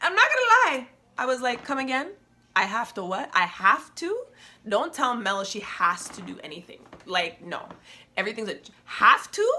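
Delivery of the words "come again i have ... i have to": getting real defensive in reply. Retelling own reply to a mentor, imitating own defensive reply. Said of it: "I got real defensive".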